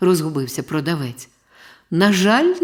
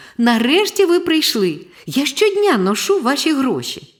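high, joyful, glad, happy outburst; 7 semitones higher than usual. A boy finally meets the man he waited weeks for: joyful exclamation. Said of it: "Хлопчик радісно вигукнув".

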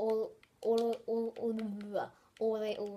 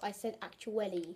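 ordinary delivery

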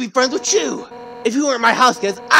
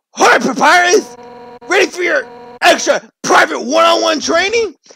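pushy, combative, in-your-face aggressive tone; 4 semitones higher than usual. Redoing a character's greeting with a different take, more aggressive voice. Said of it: "It was more aggressive".

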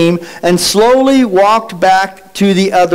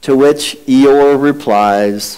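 plain

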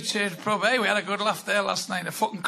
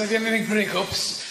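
ordinary delivery

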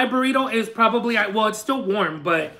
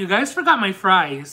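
acted, lightly sarcastic tone with a polite edge; 3 semitones lower than usual. Retelling what they said after getting all the way home, retelling, mildly sarcastic, not rude. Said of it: "I'm talking exactly like this, a little bit sarcastic, but like not like super rude".

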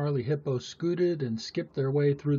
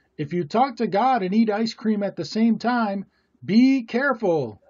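high, loud, fretful, worried cry; 7 semitones higher, 7 dB louder than usual. Narrator reads two worriers out on their daily walk, crying out. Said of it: "cried Midge and Pidge".

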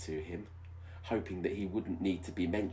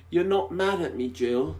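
shrill, high-pitched, full-volume, anxious, worried voice; 9 semitones higher, 8 dB louder than usual. A man asks Jill a question, in an anxious voice. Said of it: "his voice full of anxiety".

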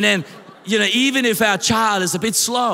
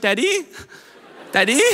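mock anxious, desperate little girl calling out; 3 semitones higher than usual. A father imagines hearing his daughter search for him, imitating her desperate calling. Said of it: "I would be able to hear the desperation".

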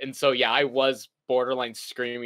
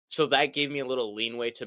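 usual speaking voice

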